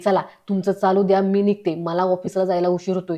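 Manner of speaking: ordinary delivery, nothing marked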